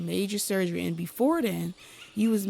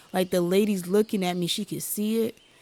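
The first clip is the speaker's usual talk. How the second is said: ordinary talk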